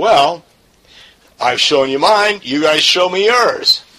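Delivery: high, loud, challenging retort tone.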